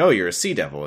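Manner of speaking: imitated snarky delivery. Retelling a scene where the doctor meets the sea devil: imitating a snarky remark. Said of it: "this is where we learn that this is a snarky doctor".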